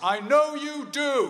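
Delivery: shrill, booming, loud high-pitched voice. Retelling what their dad said as they left the hospital ward, in a loud voice. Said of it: "in a loud voice".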